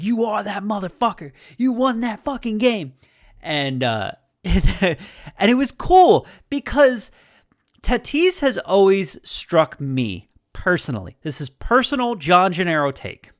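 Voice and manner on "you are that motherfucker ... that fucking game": high, in-your-face, hyped-up yell. Retelling how a teammate got right up in Tatis's face, retelling a yell. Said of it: "He's yelling in his face".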